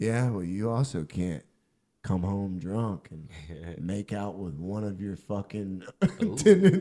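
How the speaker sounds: mock drunk voice, broken up mid-phrase. Retelling a drunk roommate's comeback: imitating drunk speech. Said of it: "he's all drunk and he goes".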